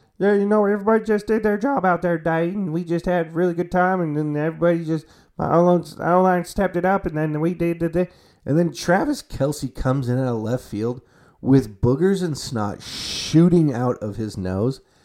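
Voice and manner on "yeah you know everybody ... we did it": high, froggy cartoon puppet voice. Acting out a happy football player's interview after the game, in a Kermit the Frog voice. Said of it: "he's got Kermit the Frog voice".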